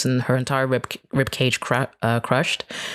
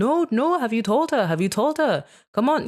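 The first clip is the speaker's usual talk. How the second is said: put-on shout, way up high, sounding across a room; 10 semitones higher than usual. Retelling a father shouting in the background during a call: imitating someone shouting. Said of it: "he's shouting in the background going".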